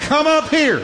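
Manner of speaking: loud, very high-pitched voice. Preaching, speaker has the church say the words from heaven with him, loud. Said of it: "say it with me, everybody, good and loud".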